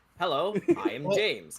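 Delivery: wooden, awkward, stiff, stilted delivery. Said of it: "they impersonating him".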